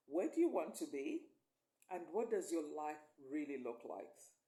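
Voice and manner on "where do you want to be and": ordinary delivery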